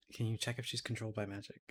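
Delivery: hushed, half-whispered stage whisper, mouth covered. Half-whispering into Rooks's ear, covering mouth: half-whispering in character. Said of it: "I was gonna whisper into Rooks's ear".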